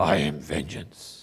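very low, hushed, brooding growl. Speaker retelling a movie scene where Batman answers who he is, in a growly voice. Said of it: "in his kind of growly voice".

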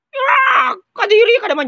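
shrieking with disgust.

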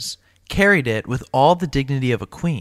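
ordinary delivery

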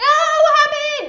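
very high, shrill, very loud shout. Speaker talking to fans reacts suddenly to something, yelling. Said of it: "Sorry, I didn't mean to yell".

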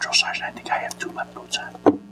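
barely audible, soft, breathy, hushed whisper. Retelling how a private reported a problem: imitating a whisper. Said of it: "He whispers to me".

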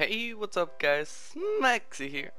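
cracking voice. Opening another Let's Play right after waking up: voice cracking, just woke up. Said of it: "that was a bit of a voice crack. I just woke up".

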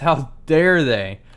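very loud, enraged, indignant, furious outburst. Gamer finding there is no new boat, talking to viewers: furious. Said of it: "I'm furious".

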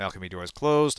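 ordinary talk

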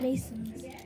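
unvoiced whisper.

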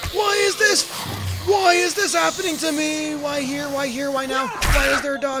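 very high, panicked, frantic voice. Playing a game and spotting a dog they don't trust, panicking. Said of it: "I'm panicking".

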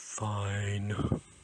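mumbled under breath. Aaargh answers Elly's question whether he is all right, muttered. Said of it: "muttered Aaargh".

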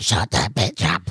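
deep, low demonic voice. Retelling what he said while a woman screamed nearby, in a Satan voice. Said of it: "like a Satan voice".

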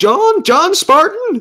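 very high-pitched, grave, weighty delivery. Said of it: "serious import".

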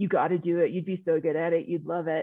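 put-on California surfer dude voice. Retelling what a teammate on the swim team urged: imitating a California surfer dude. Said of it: "a California surfer dude".

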